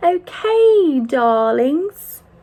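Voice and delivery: sudden British accent. Video host addresses viewers, in a sudden british accent. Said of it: "I don't know where that British accent came from".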